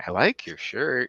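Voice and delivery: put-on high toddler voice. Retelling how a three-year-old son complimented strangers: imitating a three-year-old son's compliment. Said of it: "always the same tone of voice".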